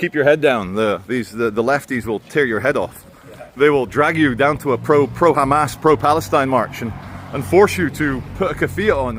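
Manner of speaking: plain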